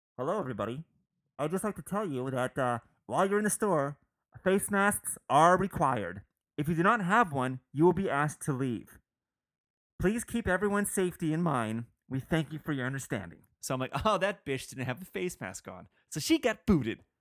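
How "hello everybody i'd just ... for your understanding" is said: public-address announcement voice. Retelling what the store speaker announced just after others left: imitating a store PA announcement.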